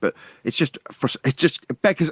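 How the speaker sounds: stumbling over words. Speaker explaining logical fallacies to another person, stuttering. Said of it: "I'm stuttering because it beggars belief".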